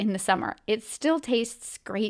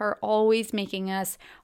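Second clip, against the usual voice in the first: ordinary delivery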